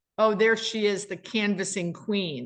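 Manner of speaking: ordinary talk, nothing marked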